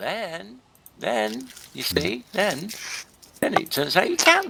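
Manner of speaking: very high, happy, pleased, delighted voice. Talking with others after a surprising discovery, sounding happy. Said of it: "You sound happy about it".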